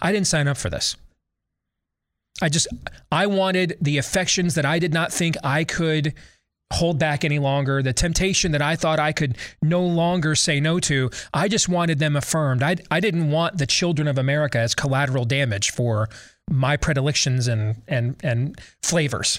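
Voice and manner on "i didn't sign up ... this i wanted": ordinary delivery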